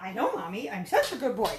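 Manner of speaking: swooping, sing-song put-on dog voice. Voicing the dog, who answers the speaker's praise: voicing the dog.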